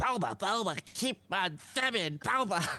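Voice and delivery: very high, creature-like put-on voice. Doing the show's sign-off as asked, in a Bulbasaur voice. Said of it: "do our sign off in your best uh Bulbasaur".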